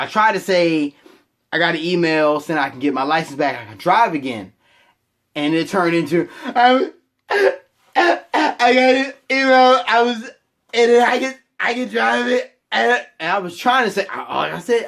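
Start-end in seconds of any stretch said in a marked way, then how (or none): 6.4-12.6 put-on pained voice, higher and slower. Retelling trying to tell his dad he can drive again; imitating own post-whipping voice. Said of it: "I went into like post-ass whipping voice".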